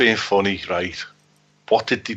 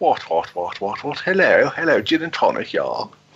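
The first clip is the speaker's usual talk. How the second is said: plummy, upper-class, posh voice. Mocking how spies talk, with plums in their gobs: posh spy voice with plums in mouth. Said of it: "walking around with plums in the gobs".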